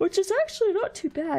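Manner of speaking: talking through a yawn. Player commenting on a randomizer playthrough, yawning while talking. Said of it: "sorry, I yawned".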